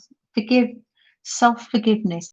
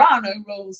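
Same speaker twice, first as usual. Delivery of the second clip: put-on American accent. Fumbling over saying there are no rules: American accent. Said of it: "Was that my American accent?".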